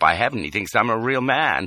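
plain reading voice

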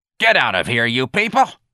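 angry, snarling delivery. Narrator voices Miss Trixie slapping her palm on the desk: Miss Trixie snarling. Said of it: "Miss Trixie snarled".

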